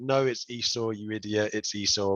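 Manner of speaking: ordinary delivery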